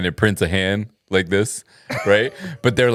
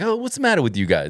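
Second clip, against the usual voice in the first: put-on Italian-American-sounding accent; 7 semitones higher than usual. Speaker imitating how a man would do his Italian thing: exaggerated Italian-American accent. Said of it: "he would like do the Italian like thing? yeah".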